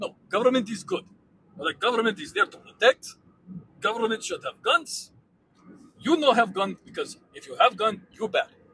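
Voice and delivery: fake Russian accent throughout. In a comedy bit trading lines with another speaker, mock Russian accent. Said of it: "anything is convincing in a Russian accent".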